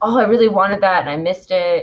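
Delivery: ordinary delivery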